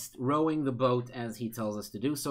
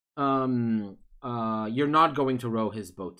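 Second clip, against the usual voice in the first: usual speaking voice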